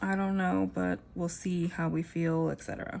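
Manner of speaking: ordinary talk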